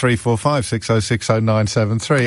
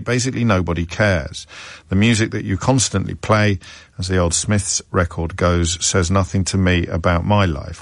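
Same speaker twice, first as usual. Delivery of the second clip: ordinary talk, nothing marked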